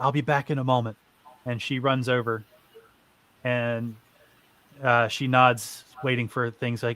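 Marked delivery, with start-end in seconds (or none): 0.0-1.0 hushed whisper. As Tempest, speaking to Matt before running over, whispering. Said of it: "she whispers to Matt".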